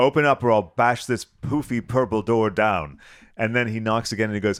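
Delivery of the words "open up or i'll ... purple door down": put-on thundering voice, louder. Tell how he stood at Ken's door demanding to be let in, imitating Oliver Reed thundering. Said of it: "Oliver Reed is thundering at the".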